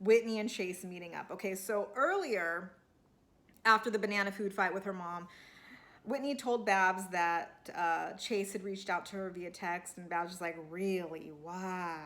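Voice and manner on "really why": put-on low voice with a Southern accent. Retelling what Babs asked about Chase's text: Babs impersonation. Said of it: "I'm working on my Babs impersonation".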